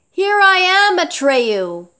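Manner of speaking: cheerful and merry. Reading a badly wounded dragon's greeting, said merrily. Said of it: "he said merrily".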